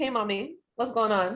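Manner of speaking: put-on Caribbean-accented voice. Retelling how they greet their dad at home: Caribbean accent. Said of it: "I just talk the same way to my mom".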